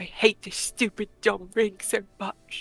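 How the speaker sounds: muttered under breath. Getting no response, a character mutters under her breath. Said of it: "Under under her breath".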